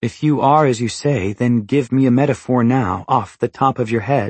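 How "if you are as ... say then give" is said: usual speaking voice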